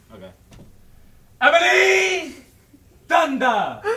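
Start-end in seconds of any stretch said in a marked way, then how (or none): 1.4-3.8 very high, very loud, ear-splitting holler. Yelling a phrase out the window: yelled out loud. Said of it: "I will yell out the window".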